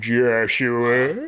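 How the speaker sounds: put-on demon voice. Explaining a name from a cartoon, then doing the Adventure Time demon voice. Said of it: "the demon's voice is like".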